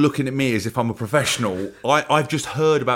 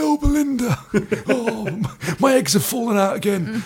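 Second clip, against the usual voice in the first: put-on northern English accent, pitched up; 9 semitones higher than usual. Imagining the voice of a woman they are discussing, put-on northern accent. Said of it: "I don't know why she's gone northern".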